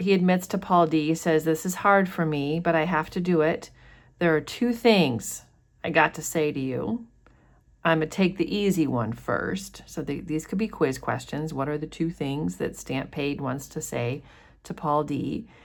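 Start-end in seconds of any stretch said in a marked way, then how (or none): none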